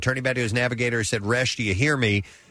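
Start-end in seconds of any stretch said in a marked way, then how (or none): none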